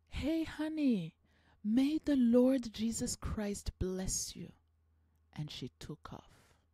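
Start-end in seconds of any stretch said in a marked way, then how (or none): 0.1-4.5 mock full holler, loud and high. Retelling how a stranger in a parking lot called out: imitating someone yelling. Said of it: "she screams, like, she yells".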